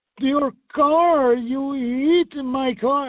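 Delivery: put-on thick Danish accent, very high-pitched, drawn out. Retelling what a woman said to the speaker after a car crash, heavy Danish accent. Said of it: "it sounded like a Danish accent".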